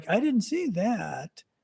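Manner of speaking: acted tired, worn-out, sick-sounding, slow, soft murmur. Retelling a Fox News interview, imitating tired-sounding Donald Trump. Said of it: "he's kind of talking like this".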